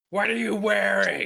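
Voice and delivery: very slow delivery, every word dragged out. Imagining that voice over the phone: Gilbert Gottfried voice. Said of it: "Hearing that voice over the phone".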